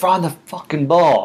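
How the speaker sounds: high-pitched yelling. Retelling a football game, the speaker quotes a buddy yelling at the TV. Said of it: "Yelling at Doug Peterson".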